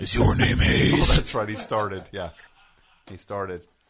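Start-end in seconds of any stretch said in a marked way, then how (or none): 0.0-0.9 whispered, raspy monster voice. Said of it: "he did it in a monster voice".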